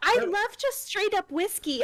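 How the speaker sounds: tiny, little, squeaky high voice. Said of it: "in her tiny squeaky voice".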